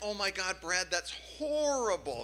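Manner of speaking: sounding shocked and taken aback.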